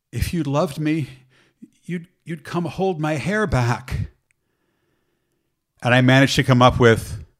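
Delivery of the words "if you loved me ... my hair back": feeble, thin, weak little voice. Retelling what a woman retching nearby said to him, imitating a thin, weak voice. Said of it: "in a very kind of thin, weak voice".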